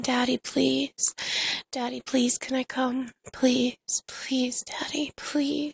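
acted, re-enacted pleading and begging. Narrator re-enacts how she begged daddy during sex: retelling her begging. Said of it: "I started to beg him".

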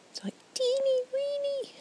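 put-on very high, silly, stupid teeny weeny voice. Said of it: "in that stupid voice".

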